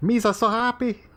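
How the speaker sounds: pitch way up, silly goofy alien creature voice. Joking about hiring someone for Star Wars, slipping into a Jar Jar Binks voice. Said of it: "That's the voice of Jar Jar Binks".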